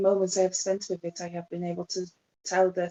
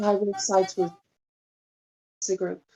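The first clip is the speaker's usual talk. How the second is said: confiding, private tone. Speaking in character to the group outside: speaking low so only the group hears. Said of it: "as low as I can do to try and make it so that only the group can hear".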